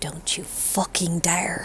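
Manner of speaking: very quiet, breathy, barely-voiced whisper. As Morgan, speaking to her in Infernal, in a whisper. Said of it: "Morgan just whispers to her in Infernal".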